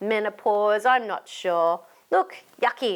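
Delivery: ordinary delivery, nothing marked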